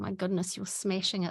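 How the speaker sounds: ordinary delivery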